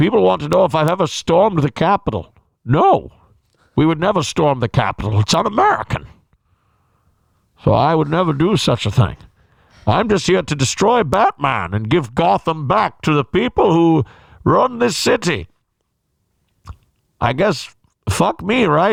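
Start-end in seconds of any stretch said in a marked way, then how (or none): 0.0-15.5 muffled, put-on English villain accent. Answering what people want to know, in a muffled English accent. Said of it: "Here I am talking in an English accent".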